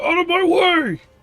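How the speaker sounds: loud obnoxious shouting. Narrating a scene, the speaker voices an unseen figure yelling in Giant: loud obnoxious yell. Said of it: "a very loud, obnoxious voice yell".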